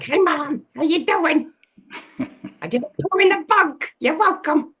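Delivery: very high, sweet, silly dog voice. A pet owner voices what her pet says to her, Hank's voice. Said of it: "Hank's voice is like".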